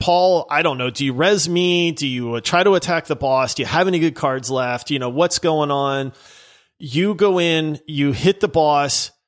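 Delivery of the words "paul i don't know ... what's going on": ordinary talk, nothing marked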